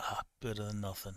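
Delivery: very quiet, disappointed mutter grumbled under the breath. Voicing a character handed an ugly orc sword: muttering disappointment under his breath. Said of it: "He will mutter his disappointment under his breath".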